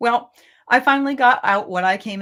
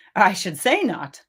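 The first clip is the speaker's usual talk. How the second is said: plain reading voice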